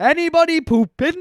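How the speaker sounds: put-on broad Scottish accent, laid on thick, very loud and high. Quoting a strange man knocking on the door, in a thick Scottish accent. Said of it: "he's got a really thick Scottish accent".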